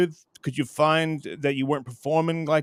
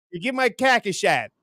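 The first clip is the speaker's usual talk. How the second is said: put-on Chicago accent with raised pitch; 5 semitones higher than usual. Reacting to the other speaker's bar story, the speaker uses a Chicago accent. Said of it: "I had to do it in the Chicago accent".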